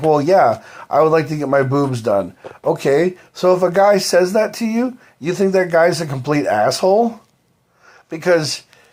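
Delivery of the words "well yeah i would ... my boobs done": ordinary talk, nothing marked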